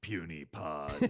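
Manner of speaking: low, hushed, deep monster voice. Saying the podcast's name the way it's supposed to be said, in a Hulk voice. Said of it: "the way it's supposed to be said... like the Hulk".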